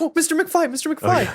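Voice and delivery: very high-pitched, excited calling voice. Retelling a scene where the character comes in with books: imitating an excited Biff. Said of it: "he's just so excited".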